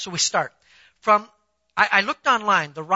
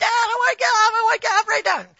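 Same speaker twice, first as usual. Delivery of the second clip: put-on very high shriek of a screaming child; 3 dB louder than usual. Father retelling his son screaming to get off a ride, retelling son's screaming. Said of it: "he's still screaming".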